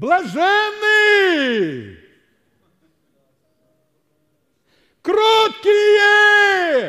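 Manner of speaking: mock very high, loud, far-carrying preacher proclamation. Retelling how a preacher addressed thousands at a service, retelling a loud proclamation. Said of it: "И голос разносился по всем горам".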